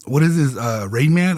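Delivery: ordinary talk, nothing marked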